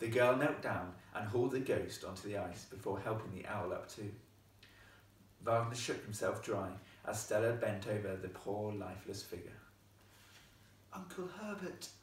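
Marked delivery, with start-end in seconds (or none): 10.9-11.9 soft half-whisper, pitched up a little. Narrator reads the girl calling to the lifeless ghost on the ice, half-whispered. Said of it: "she whispered".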